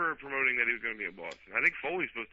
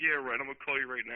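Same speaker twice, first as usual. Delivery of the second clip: normal talking voice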